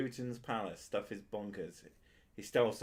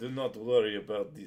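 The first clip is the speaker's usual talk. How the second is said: put-on poor Russian accent, louder; 5 dB louder than usual. Improvising a scene about diamonds being cut, bad Putin Russian accent. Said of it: "that's a really shit Russian accent".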